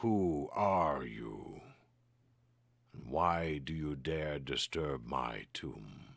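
deep, resonant, growling voice. Storyteller voicing a voice from nowhere to the players in a tomb, deep, resonant, growling. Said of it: "Deep, resonant, growling".

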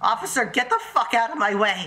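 voice breaking and cracking as it goes. Speaker shouts at an officer to get out of the way, voice cracking. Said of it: "My voice is cracking".

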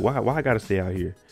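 ordinary delivery

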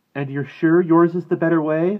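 scornful, very loud and very high-pitched. A woman answers a man who says he and his brother chose different ways: scornful. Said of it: "There was scorn in Mala's voice".

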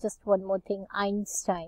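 ordinary delivery

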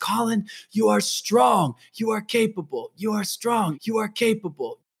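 play-acted, full-throated, high, drawn-out yell. Retelling the words said every morning in Antarctica: imitating a shout. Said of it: "I would shout the top of my lungs".

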